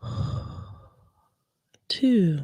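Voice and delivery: slow, whispery ASMR-style voice.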